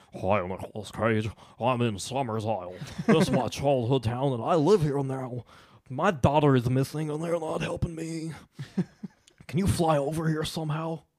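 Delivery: gradually slides into a cartoon character voice. Reading an ex-fiancée's letter aloud in a put-on voice: Butthead voice. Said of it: "you turned into Butthead at the end".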